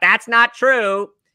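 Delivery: high-pitched, heckling, calling-out shout. Retelling a lady interrupting a joke mid-setup, imitating her yelling out. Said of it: "just yelled out".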